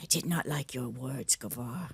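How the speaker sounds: low, kept-down, level-toned voice. She walks over to him as he looks through the stuff, in a low voice. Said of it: "kind of in a low voice".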